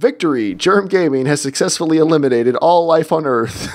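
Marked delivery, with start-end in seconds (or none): none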